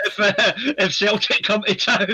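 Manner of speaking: high, loud voice, laughing through the words.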